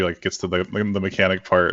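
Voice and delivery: ordinary delivery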